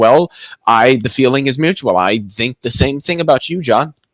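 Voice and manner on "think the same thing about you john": normal talking voice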